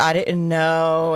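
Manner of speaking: sobbing, whining, crying voice. Retelling how someone answered questions about money: imitating someone crying and whining. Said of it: "crying and whining".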